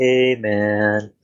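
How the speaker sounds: put-on old druid voice, easygoing, laid-back hippie drawl.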